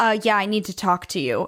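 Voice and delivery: ordinary talk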